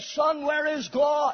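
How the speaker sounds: loud, stern preaching voice. Telling of a preacher asking a boy again: retelling a raised, louder voice. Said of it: "raised his voice even louder".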